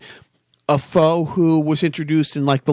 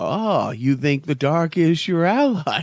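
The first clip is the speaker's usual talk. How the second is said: put-on villain voice. Quoting a villain's line from the movie: Bane voice. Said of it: "his whole line in that movie where he's like".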